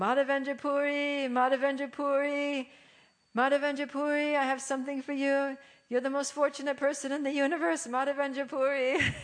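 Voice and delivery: play-acted joyous, high ecstatic shouting over and over. Retelling a visitor in the marketplace calling out a name, retelling an ecstatic yell. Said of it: "he's just yelling".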